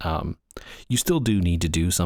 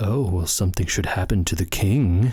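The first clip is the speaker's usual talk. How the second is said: mock sly, scheming, plotting tone. Describing how a plotter's tone sounds, retelling a sly comment about the king. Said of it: "slyly comment".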